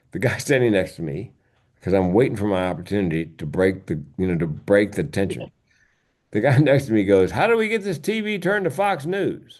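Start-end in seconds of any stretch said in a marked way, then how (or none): 7.3-9.3 very high, loud put-on voice, acted out. Speaker retelling what a man beside him at the gate said, loud voice. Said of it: "in a loud voice".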